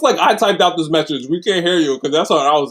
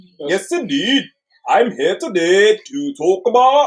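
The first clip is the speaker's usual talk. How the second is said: attempted put-on Scottish accent that misses the mark; 3 semitones higher than usual. Speaker tries out a scottish accent, then admits missing the mark: attempted scottish accent. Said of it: "I could try my Scottish accent".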